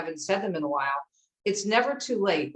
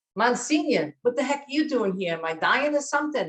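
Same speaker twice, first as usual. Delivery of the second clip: put-on New Jersey accent, pitched up; 5 semitones higher than usual. Retelling what she said to the pastor giving her the anointing of the sick, Jersey accent. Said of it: "so she had that that Jersey accent".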